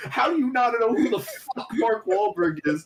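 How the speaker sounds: mock ballistic outburst, shrill, furious, very high. Retelling going ballistic at a friend who asked a question: imitating own furious yelling. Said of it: "I fucking went ballistic on him".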